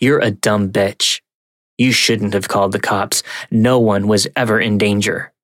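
ordinary talk

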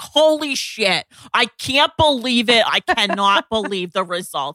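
put-on amazed, blown-away New York accent. Quoting a girl from a TikTok video, in her New York accent. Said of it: "this amazing New York accent".

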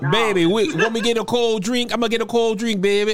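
put-on high New Orleans accent. Introducing an early podcast guest by imitating her, New Orleans accent. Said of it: "do a New Orleans accent".

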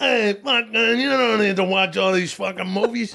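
put-on Long Island accent, pitched high. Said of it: "That's a Long Island accent?".

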